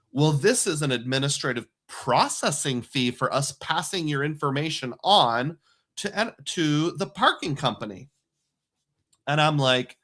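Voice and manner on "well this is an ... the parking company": ordinary talk, nothing marked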